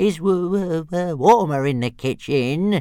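very slow, warm, drawn-out whining. Narrator reads the reply of the one being toilet-trained, carried outside: whining. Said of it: "whined Toothless".

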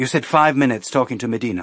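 ordinary delivery

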